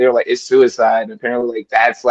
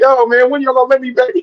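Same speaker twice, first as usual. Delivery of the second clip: put-on weepy, very high, crying, pleading voice; 13 semitones higher than usual. Mocking how a movie showed someone begging from the crowd: imitating someone crying. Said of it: "standing in the crowd crying".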